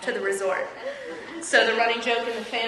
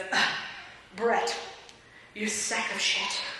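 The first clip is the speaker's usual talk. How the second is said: put-on whispered, breathy drunk mutter under breath; 5 dB quieter than usual. Retelling a relative's remark at a family dinner: imitating a drunk mutter. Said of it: "Very drunk under his breath".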